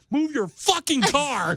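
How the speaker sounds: mock yell, high, through a laugh.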